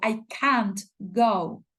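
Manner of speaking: strong stress on the word can't. English lesson on stressing negatives: strong stress on can't. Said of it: "lo decimos con mayor énfasis cuando estamos hablando en negativo".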